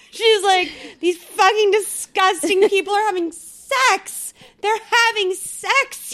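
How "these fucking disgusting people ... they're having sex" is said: high, slow outraged rant. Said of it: "starts to throw this fit".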